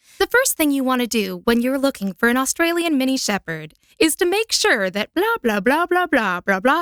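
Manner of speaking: upbeat voiceover read. Demonstrating the read they wanted for a dog-breed script, in a peppier tone. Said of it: "they wanted a bit peppier of a tone".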